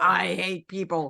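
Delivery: yelled out, screaming outburst. Telling how hearing an ice cream truck starts a joke: imitating a scream. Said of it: "we scream at each other".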